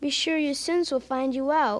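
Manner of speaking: ordinary delivery, nothing marked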